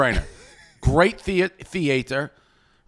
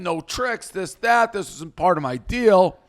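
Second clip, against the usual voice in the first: put-on heated, mild, angry, half-shouted yell; 4 semitones higher than usual. Retelling how Rico came back after storming out: imitating Rico yelling. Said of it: "He's yelling".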